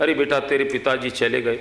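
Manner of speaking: ordinary delivery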